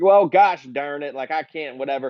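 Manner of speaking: put-on Southern US accent, slipping in. Retelling how an actor's accent kept coming in and out: Ryan Gosling Southern accent. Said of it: "a Southern accent?".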